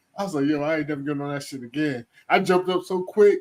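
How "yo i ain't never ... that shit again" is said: plain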